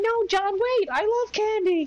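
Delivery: very high, loud falsetto woman's voice, calling out.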